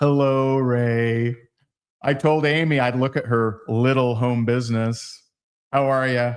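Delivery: put-on big-timing tone. Retelling how she stepped in and greeted Ray, imitating her big-timing tone. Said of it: "This is the tone she was using. ... She big time me".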